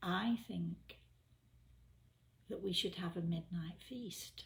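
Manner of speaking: whispered speech. Retelling what a companion whispered in their ear: imitating a whisper. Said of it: "he whispers in my ear".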